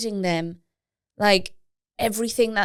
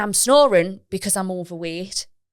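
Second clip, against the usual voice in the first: ordinary talk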